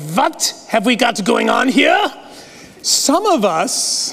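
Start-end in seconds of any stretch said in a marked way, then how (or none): 0.0-2.1 very suspicious, distrustful tone. Telling listeners how Barnabas could have shown up suspicious, do an imitation of a Gestapo official. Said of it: "isn't that a great imitation of a Gestapo official?".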